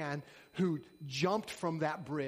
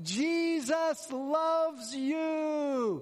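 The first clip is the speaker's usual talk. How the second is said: put-on very high shrill grandma holler, stretched you; 12 semitones higher, 6 dB louder than usual. Retelling what a woman shouted to a man in the water, retelling a grandma-voice yell. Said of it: "she yelled in her grandma voice".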